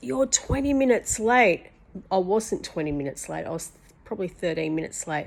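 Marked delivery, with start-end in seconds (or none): 0.0-1.7 acted, angry, aggressive screaming, loud and pitched up. Retelling how a homeowner screamed about lateness: imitating aggressive screaming. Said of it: "he's screaming at me really aggressively".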